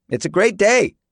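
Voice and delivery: very high, shrill, pitched-way-up yell. A woman calls out to a man, yelling. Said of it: "a woman yelled to Eagle".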